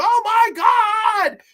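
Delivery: very high screaming cry. Retelling a scene where the lead character screams: imitating a character screaming. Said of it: "he just starts screaming".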